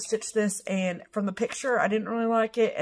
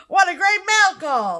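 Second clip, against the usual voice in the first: very high, loud, gushing, excited shout; 10 semitones higher, 7 dB louder than usual. Echoing the other speaker's yelling back at them: mimicking someone yelling. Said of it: "You're like".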